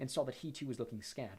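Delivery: ordinary delivery, nothing marked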